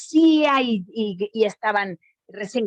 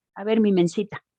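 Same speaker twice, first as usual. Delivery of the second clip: normal talking voice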